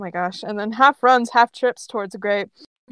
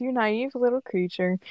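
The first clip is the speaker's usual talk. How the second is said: plain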